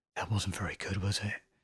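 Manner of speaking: hushed, quiet whisper. Retelling a bandmate's quiet remark after watching a video: imitating a whisper. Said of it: "whispered to me".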